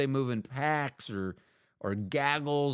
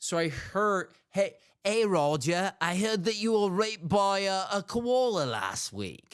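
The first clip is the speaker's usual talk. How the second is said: slowed-down, high-pitched put-on Australian accent; 6 semitones higher than usual. Acting out how most people would tell it, in a put-on Australian accent. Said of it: "if that does not sound Australian ... I'm just doing a voice".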